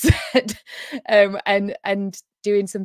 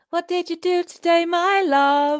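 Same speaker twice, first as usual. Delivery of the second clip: very high, slow, near-British lilt; 10 semitones higher than usual. Imitating how the other speaker says a line: British-sounding voice. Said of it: "You say it almost very British".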